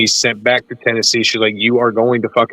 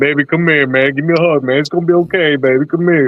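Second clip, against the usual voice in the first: high, tearful, weeping crying voice; 5 semitones higher than usual. Retelling his uncle hugging and comforting him, imitating Lamont crying. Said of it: "he was in fucking tears".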